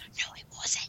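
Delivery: quiet, hushed whisper under the breath. Retelling an actor's remark from an interview about his role, said quietly. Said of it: "And then he quietly goes".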